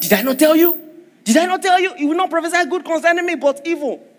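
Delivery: put-on Nigerian accent. Speaker retelling the king of Israel's complaint to Joseph, in a Nigerian accent. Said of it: "this guy was speaking like a Nigerian".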